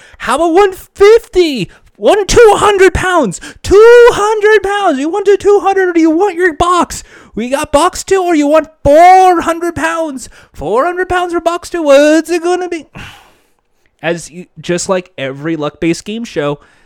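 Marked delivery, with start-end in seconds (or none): 0.2-12.9 put-on scream, much higher and louder. Acting out a man screaming at game show contestants, imitating someone screaming. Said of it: "he's just screaming at the contestants".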